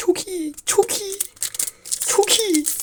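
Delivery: thrilled, excited, high and hushed voice. Opening card packs, excited, heart pounding. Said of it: "Kalbim atıyor. Heyecanlandım".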